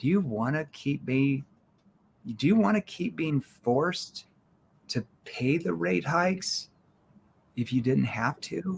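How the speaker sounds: soft, caring, worried, concerned tone. Demonstrating how to lean down and ask someone this, in a concerned tone. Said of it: "in a concerned tone".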